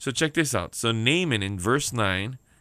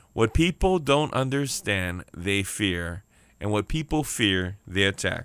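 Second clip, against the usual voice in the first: slow, deliberate emphasis. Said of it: "I'll say that real slow again".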